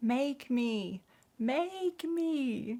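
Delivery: yelling, pitched way up high.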